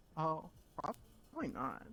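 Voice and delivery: deep, slow voice. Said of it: "the outsider voice".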